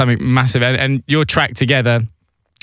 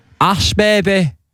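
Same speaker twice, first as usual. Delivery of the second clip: put-on heavy Yorkshire accent laid on thick, pitched higher; 7 semitones higher than usual. Imitating how Dom says a nickname: imitating Dom's Yorkshire accent. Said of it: "Just like that".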